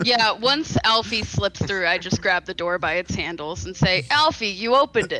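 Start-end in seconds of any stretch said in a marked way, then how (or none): 4.1-5.2 dry, deadpan, sarcastic delivery. In a game, grabbing the door after a companion slips through, dry and sarcastic. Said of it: "Very dryly and sarcastically".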